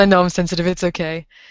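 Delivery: ordinary talk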